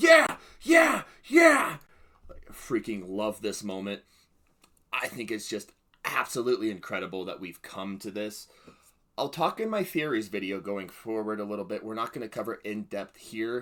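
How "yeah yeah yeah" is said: very high, loud cheering scream. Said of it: "I was just screaming at the T V screen".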